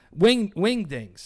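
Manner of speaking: slow, loud, emphatic. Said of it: "I can't say that without being emphatic".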